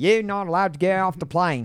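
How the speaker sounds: bad put-on Australian accent. Joking about the airport officials, a horrible Australian accent. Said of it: "I did a horrible Australian".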